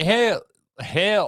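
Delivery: put-on sudden Southern accent. Reacting to a zombie theory, slipping into a sudden southern accent. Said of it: "I got Southern all of a sudden".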